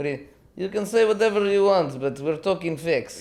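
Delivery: imitated Russian accent, put-on. Talking about a man removed from a plane, the speaker puts on a Russian accent. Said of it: "you do you do that much better than I do".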